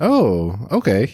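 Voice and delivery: bright, excited voice lighting up with interest. Reacting to hearing which animal will be reviewed: excited, brightened voice. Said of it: "Your voice kinda brightened up".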